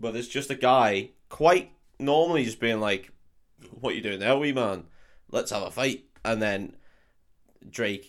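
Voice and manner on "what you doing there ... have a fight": quieter, mild put-on Glaswegian accent. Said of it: "in quite, quite a mild accent".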